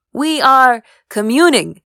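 put-on loud, boyish voice, said through laughter. Drumming his hands on the ground, a friend shoos away a girl's father, laughing like a boy. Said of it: "laughing like a boy".

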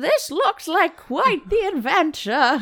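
put-on very high old-lady tone. Reading a story aloud, repeating the narrator's line in a grandma tone. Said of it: "I said in a very grandma tone".

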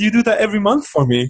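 high voice with a wide-ranging pitch.

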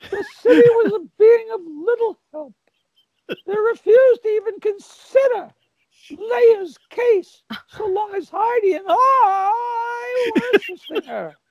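very high pitch with the word "I" drawn out. Asked to read a short paragraph for the fans, a speaker reads in the Robin voice. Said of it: "could you please read it in the Robin voice?".

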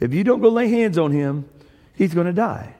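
ordinary talk

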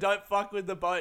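high-pitched scream. Recounting a man yelling at the group, retelling a man's screaming. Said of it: "he was screaming".

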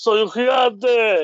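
slow, drawn-out shout in giant's voice.

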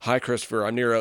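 nonchalant, slightly evil tone. Comparing the scene to Star Trek: imitating Nero, nonchalant and slightly evil. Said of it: "nonchalant, slightly evil".

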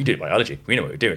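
mock giggling, acted-out giggle. Telling a school story, the speaker quotes another student answering the teacher: imitating someone giggling. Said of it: "Amelia's like giggling".

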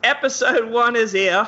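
put-on high Australian accent slipping into British. Introducing an episode of a Patreon show in another person's voice: imitating Marcy's Australian accent. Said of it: "Let me try to do Marcy's voice".

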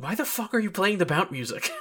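high-pitched, mild, half-yelled outburst. Recounting a scene they watched, acting out yelling at the screen. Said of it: "I'm just like yelling at my screen".

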